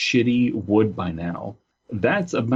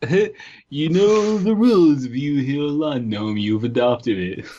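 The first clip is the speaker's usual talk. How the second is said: high-pitched, unhinged put-on crazy-person voice; 5 semitones higher than usual. Joking around in a group, in a crazy nutjob voice. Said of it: "does nutjob voice".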